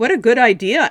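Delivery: polite, insincere, faked agreeing tone. Narrator reading a woman answering the speaker's mother, backing out: polite fib. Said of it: "Anne fibbed politely".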